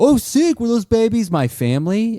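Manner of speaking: breezy, shrill, blaring California surfer-dude voice. Retelling how a man on video chats poses as a california dude. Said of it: "he pretends to be, like, a California dude".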